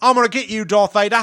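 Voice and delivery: put-on Australian accent, loud and high-pitched. Quoting a kid from an audiobook in an Australian accent. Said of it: "I love that accent".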